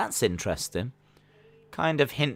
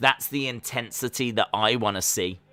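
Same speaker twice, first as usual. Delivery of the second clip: ordinary talk, nothing marked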